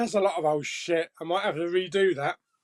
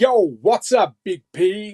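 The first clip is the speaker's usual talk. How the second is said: sudden, loud, put-on American accent; 7 dB louder than usual. Reading viewer comments aloud, the speaker greets a commenter in an american accent. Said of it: "I did that in American accent".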